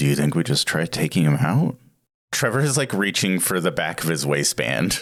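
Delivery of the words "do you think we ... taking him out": muttered quietly under breath, lower. Asking a fellow player about attacking someone: under his breath. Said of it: "under my breath".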